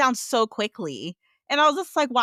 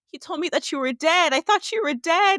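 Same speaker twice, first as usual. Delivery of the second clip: put-on high, overwhelmed outburst, words spilling out with feeling; 5 semitones higher than usual. Recapping a favorite drama scene as a man hears a woman's voice, acting out being overcome with emotion. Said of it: "He's overcome with emotion because he's like".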